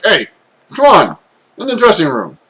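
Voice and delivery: dwarf character voice, female. Voicing a dwarf shop owner telling a customer to change elsewhere: dwarf shopkeeper voice. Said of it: "the female dwarf is like".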